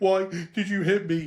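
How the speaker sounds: high, heaving crying, catching breath between sobs. Retelling being punched by their dad as a child and asking why, retelling crying, heaving. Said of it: "I'm like heaving, crying".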